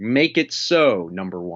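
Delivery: grand, dramatic, commanding starship captain voice. Retelling an order given while pointing: Picard impression. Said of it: "a little Picardy there".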